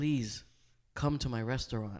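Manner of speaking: put-on desperate voice. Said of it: "on some, like, desperate tip".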